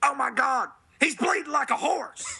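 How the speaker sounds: high, excited commentator-style call. Telling the others what you would say about choke slamming a horse, do a JR impression. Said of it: "Classic JR call".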